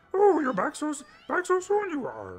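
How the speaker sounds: very high, loud, swooping squeaky voice. Voicing a game character who sounds like Yoda: Yoda voice. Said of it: "He sounds like Yoda".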